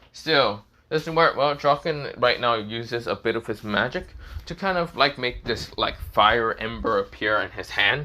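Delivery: ordinary delivery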